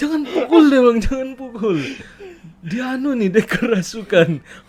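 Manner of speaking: high, loud, frantic pleading tone.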